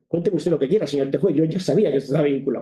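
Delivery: ordinary delivery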